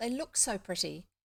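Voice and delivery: ordinary delivery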